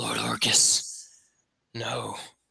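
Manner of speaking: out of breath. A storyteller voices a figure shot out of a portal onto the ground, gasping for breath. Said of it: "gasping for breath".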